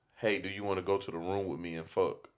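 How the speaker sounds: whisper. Retelling what she whispered in his ear in the kitchen: imitating a whisper. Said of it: "she whispers in my ear and goes".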